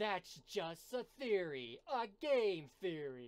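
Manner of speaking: booming, very loud, slow, high, drawn-out pronouncement. Quoting a YouTuber's catchphrase while comparing a game voice: MatPat impression. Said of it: "isn't that Matt Pat?".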